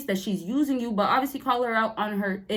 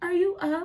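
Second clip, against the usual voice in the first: sugary, sweet, cute, pitched-up voice; 7 semitones higher than usual. Acting out how she'll ask if you're up, imitating her being cute. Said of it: "She'll be a little bit more cute".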